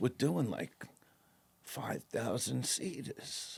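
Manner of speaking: bashful, shy, hesitant half-whisper. Retelling what a man told him at the store, imitating him saying it shyly. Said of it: "he was like shy to say it".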